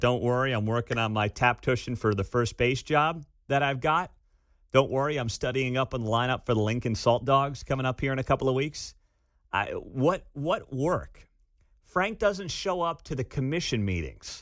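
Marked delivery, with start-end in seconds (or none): none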